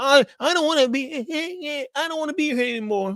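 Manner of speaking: mock very high-pitched, whiny, drawn-out fake sobbing. Imitating a toxic person whose partner is leaving them; mock crying. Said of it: "just start crying".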